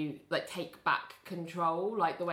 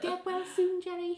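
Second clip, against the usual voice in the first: put-on clumsy very high Liverpool accent; 14 semitones higher than usual. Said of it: "That's my terrible Liverpudlian accent".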